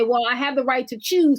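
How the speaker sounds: ordinary talk, nothing marked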